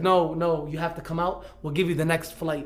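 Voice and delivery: ordinary talk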